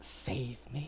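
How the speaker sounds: faint whisper, barely audible. Voicing a whisper coming from a heart dropped on the ground: faint whisper. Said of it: "You hear a faint whispered voice".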